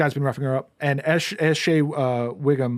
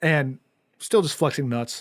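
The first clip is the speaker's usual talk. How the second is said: ordinary talk, nothing marked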